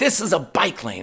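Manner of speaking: mock heated, angry, scolding yell. Retelling confronting a man in a bike lane, retelling an angry yell. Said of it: "And I'm just yelling that".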